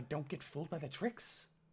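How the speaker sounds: ordinary delivery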